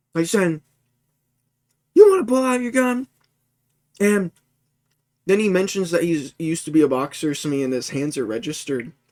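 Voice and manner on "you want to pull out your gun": put-on very high, shrill, whiny, childish screeching scream. Retelling a man confronting another guy, imitating high-pitched whiny screaming. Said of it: "screaming at him and whining like a child in a high-pitched voice".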